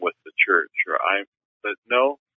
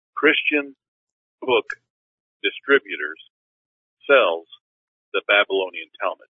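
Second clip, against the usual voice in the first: deliberate, slow, halting, spaced-out word by word. Talking to Jerry, the speaker repeats a point slower, slow and deliberate. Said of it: "let me just say that slower".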